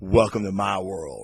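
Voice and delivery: acted, ice-cool, unbothered delivery. Retelling a comic scene where a flash blinds everyone: cool Matt Murdock line. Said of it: "real cool".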